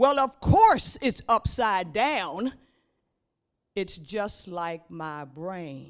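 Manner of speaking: put-on fed-up, slow, drawn-out exasperated tone. Retelling the lady's reply about her upside-down piece: imitating a very exasperated tone. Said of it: "in a very exasperated tone".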